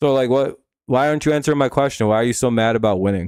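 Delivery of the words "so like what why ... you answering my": plain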